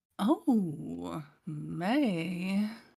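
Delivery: sultry, seductive, flirty come-hither voice. Answering a voice request in character: seductive flirty voice. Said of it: "in the most seductive, flirty voice possible".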